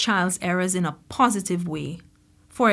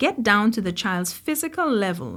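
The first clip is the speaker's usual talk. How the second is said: normal talking voice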